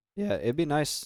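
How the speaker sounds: voice cracking. Speaker talks while playing a game, voice cracking. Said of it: "my voice cracked".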